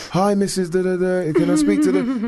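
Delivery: put-on high young child voice. Showing how they phone a friend's parents, putting on a young kid's voice. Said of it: "I try and put on like a young kid's voice".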